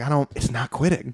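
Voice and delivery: put-on nervous woman. Retelling a woman hitting something that won't quit, imitating her nervousness. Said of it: "she's just getting a little nervous".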